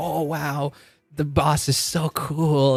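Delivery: dazzled, starry-eyed awe, high and slow. Retelling a scene the speaker loves, imitating starry-eyed awe. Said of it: "Belle was all like starry eyed".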